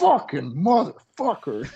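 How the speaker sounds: furious swearing. Retelling seeing the truck after a workout: retelling own angry cursing. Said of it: "I'm really mad".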